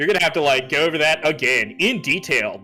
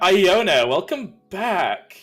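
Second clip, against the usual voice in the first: really effeminate voice; 5 semitones higher than usual. Showing how a character was first going to greet iona, in a really effeminate voice. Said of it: "was gonna be like really effeminate".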